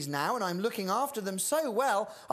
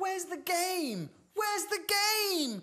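very high, top-of-the-lungs shout; 11 semitones higher than usual. A girl calls to another girl, shouting at the top of her voice. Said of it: "Shouted Mitsy at the top of her voice".

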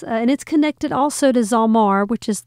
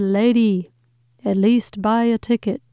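plain

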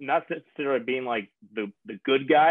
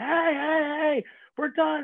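mock yelling and screaming, higher pitch. Showing the wrong way to break up players: demonstrating screaming. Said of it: "like coming in screaming".

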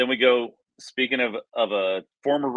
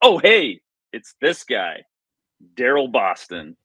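offhand, casual, raised stadium announcer voice; 6 dB louder than usual. Remembering how the stadium announcer called a player's name: imitating a casual stadium announcer. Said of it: "how the announcer, like, casually".

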